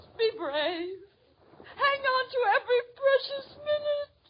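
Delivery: soft, tearful weeping through the words. [name] speaks to Liz, who keeps saying she'll be all right, tearful and crying. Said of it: "don't cry".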